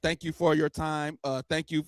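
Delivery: mock robotic worker voice. Imitating a worker who reads thank-yous like lines: imitating a robotic worker. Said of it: "if they sound like that".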